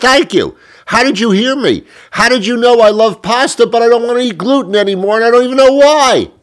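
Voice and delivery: shrill yelling, pitched very high. Describing a trip down the supermarket pasta aisle, yelling. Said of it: "I'm sorry for yelling".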